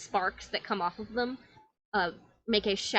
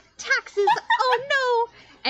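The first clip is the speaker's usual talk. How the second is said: put-on child voice, higher and louder; 7 dB louder than usual. Voicing a child who just became a knight: voicing the child turned knight. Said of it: "this kid looks down and goes".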